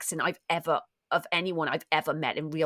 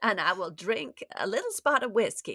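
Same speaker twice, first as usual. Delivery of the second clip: put-on refined Southern accent, higher pitch; 4 semitones higher than usual. Doing accents on request, the speaker shows a Great Gatsby refined Southern accent. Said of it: "refined, Great Gatsby kind of great Southern American".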